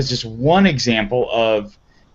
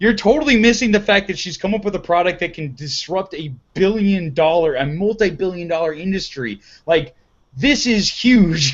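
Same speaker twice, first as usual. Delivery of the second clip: high, fired-up, worked-up emphatic scream; 6 semitones higher than usual. Retelling a reaction to an on-stage discussion of a product: imitating own screaming. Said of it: "was just, like, screaming".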